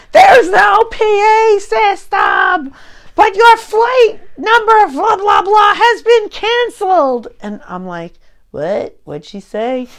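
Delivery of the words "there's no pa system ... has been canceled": very high, shouted announcer-style voice. Retelling a canceled flight, the speaker imitates a uniformed woman shouting. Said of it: "she's shouting".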